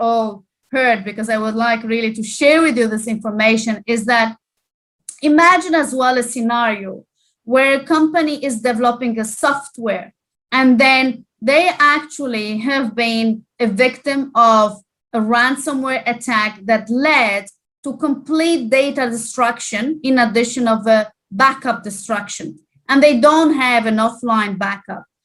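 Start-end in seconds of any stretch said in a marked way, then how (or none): 1.0-3.8 fast, rushed delivery. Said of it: "I'm speaking very fast".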